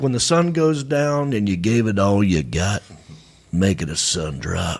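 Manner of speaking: slow, drawn-out cowboy drawl. Suggesting a slogan for a photo contest: Sam Elliott voice. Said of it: "I say it like Sam Elliott".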